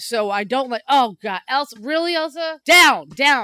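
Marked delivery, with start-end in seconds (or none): 0.9-3.4 screaming, much higher and louder. Speaker breaks off mid-conversation to yell at her pet, screaming at a pet. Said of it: "Your entire life is just screaming at".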